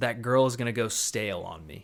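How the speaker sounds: normal talking voice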